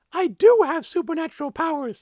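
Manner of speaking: very high, loud, squeaky voice. Narrator reads the character's reply to the man demanding the vial, squeaky Sri Simbaji voice. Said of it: "he squeaked".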